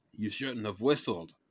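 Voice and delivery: fast, reproachful, blaming scolding. In a read story, one companion scolds another in a forest clearing, scolding. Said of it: "Benjamin scolded".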